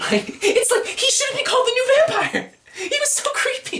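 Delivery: very high laughing squeal.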